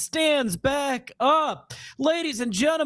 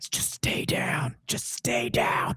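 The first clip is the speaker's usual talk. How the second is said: hushed, breathy whisper; 7 semitones lower, 4 dB quieter than usual. Running into the ring over a downed wrestler: Vince McMahon style. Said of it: "all Vince McMahon style".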